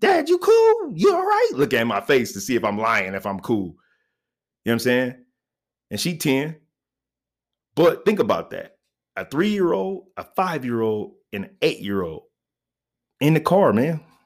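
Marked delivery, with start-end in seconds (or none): 0.0-1.5 very high-pitched, anxious, worried voice. A father retells his daughter running to him after his fall: imitating his daughter. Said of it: "My daughter come running from her room".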